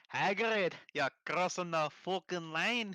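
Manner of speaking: put-on very slow, high, full Scottish accent. Acting out how they go completely Scottish, speak to Hagrid in a put-on, completely Scottish accent. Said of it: "completely Scottish".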